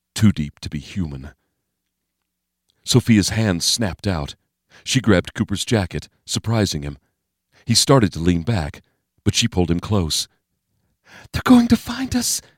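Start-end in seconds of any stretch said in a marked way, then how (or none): 11.4-12.4 very high hissing voice. Narrator reads a woman grabbing a man's jacket and pulling him close, hissed. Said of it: "she hissed".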